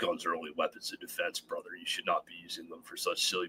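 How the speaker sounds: very quiet, low, hushed, serious trainer voice. Speaker voicing the serious trainer guy he is supposed to play, serious trainer guy voice. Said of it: "I should do that voice".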